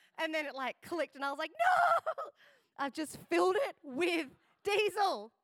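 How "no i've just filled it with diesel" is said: mock yell, drawn out, high-pitched, loud, swooping. Telling a story, then apologising for the volume, yelling. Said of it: "Sorry, I'm yelling".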